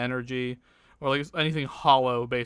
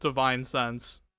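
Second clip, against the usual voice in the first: ordinary talk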